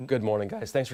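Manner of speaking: soft voice with the voice cracking. A guest greeting the hosts at the start of the segment, voice cracking. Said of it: "Oh, my voice cracked".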